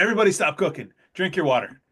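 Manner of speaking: loud called-out voice. Retelling calling out to a whole open kitchen: retelling a loud call to the kitchen. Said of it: "I'm loud and big".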